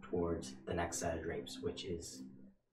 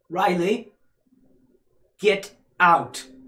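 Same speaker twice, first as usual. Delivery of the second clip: booming, very loud, high-pitched forceful delivery; 13 semitones higher, 18 dB louder than usual. Narrating a scene where a voice orders the listener out, in a loud voice. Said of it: "a loud voice that just says".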